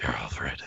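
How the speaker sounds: creepy, low, soft whisper.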